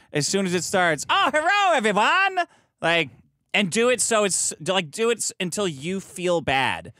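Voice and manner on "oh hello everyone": crude put-on Chinese accent, pitched high. Suggesting a rehearsal bit done the entire time, put-on racist Chinese accent. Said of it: "Only do a racist Chinese voice the entire time".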